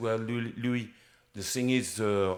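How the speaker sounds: put-on French accent. Retelling own words to a collapsed colleague: French accent. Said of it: "I'm speaking to you in a French accent".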